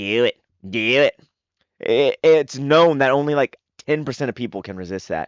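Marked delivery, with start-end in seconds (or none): 0.0-1.2 put-on very slow, dragged-out little old man voice. Retelling how Palpatine urges Anakin on: imitating Palpatine saying do it. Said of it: "a little old guy telling you".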